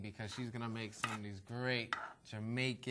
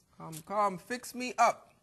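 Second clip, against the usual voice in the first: put-on, bad Jamaican accent, very high and slow; 10 semitones higher, 4 dB louder than usual. Joking about what cooks say while making food, put-on Jamaican accent. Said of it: "my Jamaican accent is no good".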